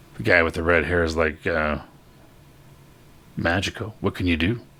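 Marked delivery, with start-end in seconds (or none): none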